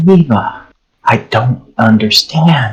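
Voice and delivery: hushed whisper. In a tabletop game, speaking telepathically to eva in character: whispering. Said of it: "I'm still whispering".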